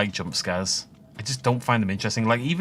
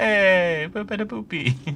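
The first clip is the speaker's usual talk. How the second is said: mock Italian accent, higher pitch; 8 semitones higher than usual. Voicing a friendly light inviting people in: put-on italian accent. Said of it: "They're Italian".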